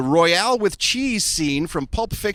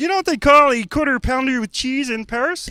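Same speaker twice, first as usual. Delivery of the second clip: high frog character voice; 8 semitones higher, 4 dB louder than usual. Play a scene between Kermit the Frog and Bane, asking your question in a Kermit the Frog voice. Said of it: "We're gonna do the scene as Kermit the Frog".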